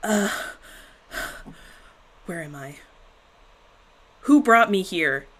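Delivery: breathless, loud, panicked hyperventilating gasps. Voicing a character who lands after a trip: acting out hyperventilating.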